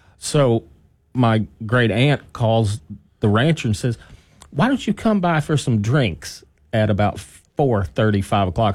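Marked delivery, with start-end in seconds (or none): 4.5-8.8 strong, thick, put-on West Texas accent. Retelling the great aunt inviting the rancher for drinks: west texas accent. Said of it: "very, very West Texas accent".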